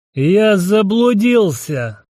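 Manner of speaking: put-on completely drunk voice, high-pitched. Reading a first-person story, the narrator answers a gnome in a completely drunk voice. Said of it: "Совершенно пьяным голосом отозвался я".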